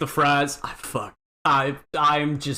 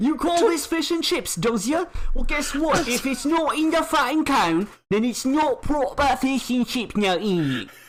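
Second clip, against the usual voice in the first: put-on British accent, very high-pitched; 11 semitones higher than usual. Doing a comic impression complaining about fish and chips: put-on British accent impression. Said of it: "that impression".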